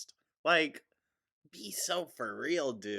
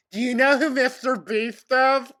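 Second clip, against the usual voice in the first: put-on very high, very loud, shrill kid voice; 14 semitones higher, 13 dB louder than usual. Recalling what kids asked you when you were a server, imitating twelve year olds. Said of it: "literal twelve year olds".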